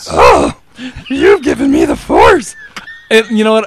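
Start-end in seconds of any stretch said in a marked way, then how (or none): 0.1-2.6 slowly dragged-out sultry voice. Retelling a movie scene where she talks dirty: Yoda voice talking dirty. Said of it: "talking dirty to him in Yoda's voice".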